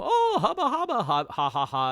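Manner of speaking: gleeful, excited cartoon creature voice, swooping high, bouncy. Recapping a movie, voicing the Marsupilami seeing the heroes: put-on excited Marsupilami voice. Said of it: "I guess that's his excited voice".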